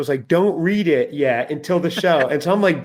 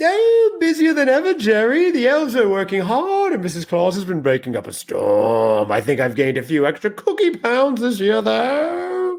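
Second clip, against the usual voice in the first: jolly character voice; 6 semitones higher than usual. Greeting podcast listeners as a guest from the North Pole: Santa Claus voice. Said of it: "I'm a Victorian Santa".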